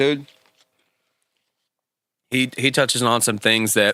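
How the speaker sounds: words muffled around chewing food. Asked what he thinks, answering while eating, talking with mouth full. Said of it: "Chew your food".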